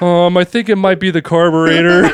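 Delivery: anxious, hesitant, nervous and neurotic-sounding voice. Retelling the uncle guessing what is wrong: imitating a neurotic uncle.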